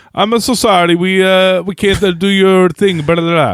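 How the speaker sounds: put-on Italian accent, drawn out. Retelling a story, speaker quotes a man answering the phone: Italian accent. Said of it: "he says in an Italian accent".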